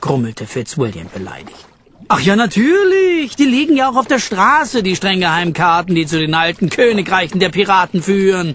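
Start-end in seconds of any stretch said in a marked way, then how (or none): 2.1-8.5 sarcastic, derisive, scornful, mocking tone. Jackie answers Fitzwilliam's grumbling about a map, mocking. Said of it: "verhöhnte Jackie".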